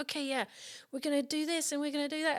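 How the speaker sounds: bad Australian accent, high. Retelling what a stunt person said on set: bad Australian accent. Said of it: "I'm doing a really bad Australian accent".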